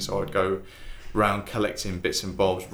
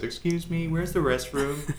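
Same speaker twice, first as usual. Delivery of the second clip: bad fake American accent, pitched up; 9 semitones higher than usual. Retelling asking someone at Lakeside Shopping Centre a question; put-on American accent. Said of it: "I used to walk around with an American accent".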